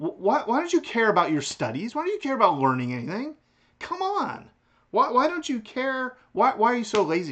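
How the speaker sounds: loud, high accusing. Speaker poses questions to the philosophy class, unable to keep a straight face: mock accusing. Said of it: "I can't do this with a straight face".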